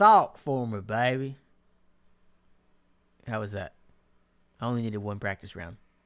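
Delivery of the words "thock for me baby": very loud, slow, drawn-out put-on Southern drawl. After muting the mic to practice, put-on southern accent. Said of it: "Got a couple Southern accents for me".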